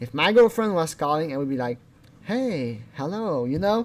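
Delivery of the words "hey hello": easy, gentle, soft, mellow voice. Showing how he would greet his calling girlfriend, mellow voice. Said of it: "more of a mellow voice".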